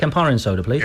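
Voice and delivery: normal talking voice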